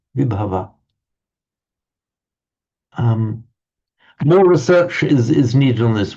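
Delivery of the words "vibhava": stress on first syllable vi in Vibhava. Discussing where to stress prefixes, stress on vi of vibhava. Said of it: "I don't feel reluctant to stress the V there".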